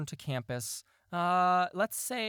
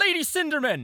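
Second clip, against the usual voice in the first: loud, very high herald-style call; 12 semitones higher, 8 dB louder than usual. Voicing a herald who calls out to a player: calling out loudly. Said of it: "loudly at you".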